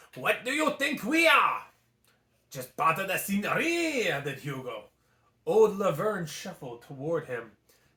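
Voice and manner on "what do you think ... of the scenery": put-on French accent, higher. Reading a story aloud, voicing a gargoyle: French accent. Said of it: "we're going with the French accent today".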